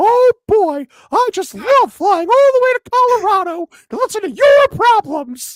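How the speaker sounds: squeaked out high and loud. Showing off an impression during the show: South Park Mickey Mouse voice. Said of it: "I do a great South Park Mickey Mouse".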